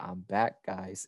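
eerie, creepy, unsettling delivery. Retelling a video where an actor talks to the audience: creepy Kevin Spacey voice. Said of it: "in a really creepy manner".

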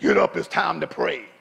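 thunderous, commanding, deep booming bass voice. Recalling dad waking the family at 5 a.m. to pray, thunderous bass voice. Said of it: "with that thunderous bass voice".

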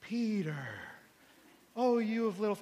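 put-on slow British voice, like an old film. Retelling the film scene where Jesus speaks to the sinking Peter, slow Jesus voice. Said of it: "you have this slow tone".

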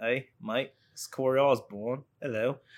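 put-on Kiwi accent. Greeting the podcast host: Kiwi accent. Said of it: "I have my Kiwi voice going all the time".

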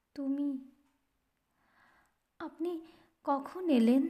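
faint, weak, feeble voice. A woman greets the narrator on meeting him again, in a faint voice. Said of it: "ক্ষীণ কণ্ঠে সে কইলে".

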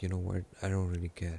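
usual speaking voice

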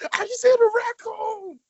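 very high-pitched, loud screaming. Describing a man's posted video on loop, retelling someone screaming. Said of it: "it's just him screaming".

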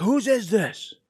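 shrill scream, pitched very high. Retelling how a shop owner grabbed them as a kid: imitating a man screaming. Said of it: "he was screaming at me".

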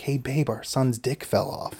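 hushed, soft half-whispered stage whisper. Retelling a remark to a partner during a birth: retelling a half-whisper. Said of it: "And I whisper down".

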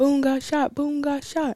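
mock, very high-pitched screaming, repeated over and over. Retelling a late-night phone call about a shooting, imitating Jalen screaming. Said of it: "Jalen just was screaming".

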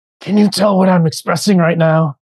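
frustrated, heated anger. Speaker testing whether the listener can read tone, asking in a frustrated, angry voice. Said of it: "I can hear the frustration in your voice".

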